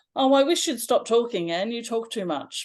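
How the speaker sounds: mocking, heavily sarcastic teasing tone. Retelling how teenage friends teased them: imitating a sarcastic taunt. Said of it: "in that very sarcastic way".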